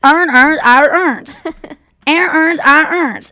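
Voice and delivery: put-on Baltimore accent. Retelling a guy saying words the Baltimore way, Baltimore accent. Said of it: "have a Baltimore accent".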